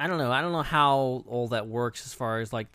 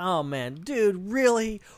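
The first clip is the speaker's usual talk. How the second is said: put-on condescending voice, higher pitch; 8 semitones higher, 3 dB louder than usual. Imitating how Mendo delivers a line: imitating Ben Mendelsohn being condescending. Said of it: "Mendo is so good at being condescending".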